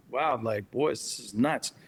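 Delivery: ordinary talk, nothing marked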